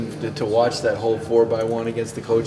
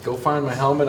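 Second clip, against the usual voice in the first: ordinary delivery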